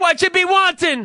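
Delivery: put-on speaking with a Somali accent. Joking about an armed restaurant manager, the speaker tries a Somali accent. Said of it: "How do you do a Somali accent?".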